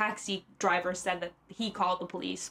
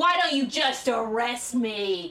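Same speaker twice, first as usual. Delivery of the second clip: put-on slurred, drawn-out drunk voice, shouting; 3 semitones higher than usual. Retelling a drunk man's outburst at police: imitating someone shouting. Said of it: "start yelling and eventually shouting".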